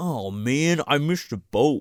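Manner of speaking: sore, fed-up, annoyed, pissed-off grumbling. Recapping a show, imitating stranded rave-goers, mock-pissed off. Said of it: "These people are so pissed".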